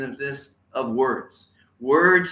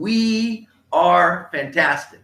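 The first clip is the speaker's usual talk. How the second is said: loud, enthusiastic, heartfelt, with drawn-out "we"; 4 semitones higher, 5 dB louder than usual. Speaker leading viewers on camera in an affirmation, loud and enthusiastic. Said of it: "Say it with enthusiasm and like you mean it".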